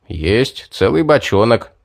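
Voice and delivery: plain reading voice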